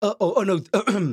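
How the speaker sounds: voice cracking up high.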